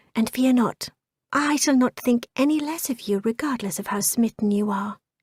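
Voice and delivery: hushed, quiet, conspiratorial confiding tone. Narrator reads Jane speaking to him, in a hushed, conspiratorial tone. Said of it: "in a hushed, conspiratorial tone".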